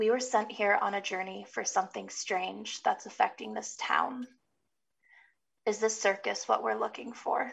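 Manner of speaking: hushed half-whisper, spoken as a quiet aside. Asking a seer a private question in character: half-whispering. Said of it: "And she whispers it".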